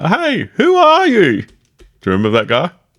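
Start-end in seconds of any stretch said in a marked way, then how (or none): 0.0-1.4 very high, very slow, drawn-out yell. Retelling a movie scene with a guy on a motorbike: imitating someone yelling.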